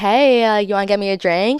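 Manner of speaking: mock light, fun, breezy, unbothered, casual tone.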